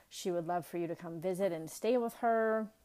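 plain

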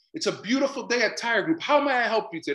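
bright smiling tone. A former receptionist showing how she was told to answer the phone: smiling voice. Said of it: "your voice is a smile".

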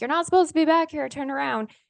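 high, sudden yell, as if from afar. Speaker recalls a scruffy man in the distance: retelling a yell. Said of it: "starts yelling like".

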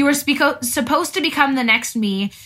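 normal talking voice

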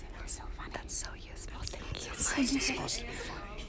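very soft, playful whispered banter.

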